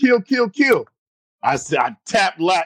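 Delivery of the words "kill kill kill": put-on high, loud yelled call. Telling how the other man made the call you were waiting for, retelling a yell. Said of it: "he yells, he goes".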